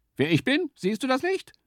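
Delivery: very high-pitched scolding, berating. The small creature answers the stag's scornful question, scolding. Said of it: "schimpfte das Tier".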